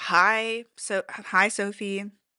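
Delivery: exaggerated, frosty, very slow, annoyed drawl. Retelling how a girl answered the speaker's hello, mock-annoyed greeting. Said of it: "she was annoyed with me for saying hello".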